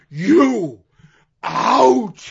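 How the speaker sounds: thrown out high and lively. Retelling how Roddy Piper hobbles down to the ring: imitating Roddy Piper yelling energetically. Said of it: "in a very energetic way yells".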